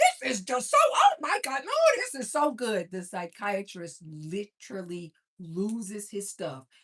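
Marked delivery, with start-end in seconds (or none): 0.0-2.9 very high, loud, shrill, brash, obnoxious gushing. Retelling a movie scene where Bob eats corn: loud, obnoxious Bob impression. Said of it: "he's just so loud and obnoxious with it".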